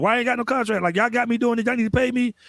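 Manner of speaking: acted exasperated, fed-up tone. Retelling own past complaint about a contract: retelling own frustrated complaint. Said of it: "'Cause I was frustrated".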